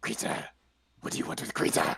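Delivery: grumbling, disgruntled, grumbly delivery. Game master voicing someone behind a door questioning the party: grumbly voice. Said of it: "you're gonna hear this grumbly voice".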